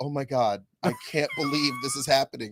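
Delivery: sad, high, swooping tearful cry. Retelling what a tearful mom said at the airport: imitating someone in tears. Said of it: "legitimately in tears".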